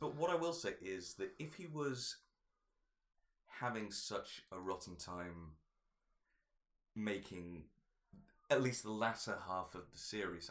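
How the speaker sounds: voice catching with feeling. Discussing an actor's rotten time making the latter half of a series, choking up. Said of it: "I'm choking up a bit now".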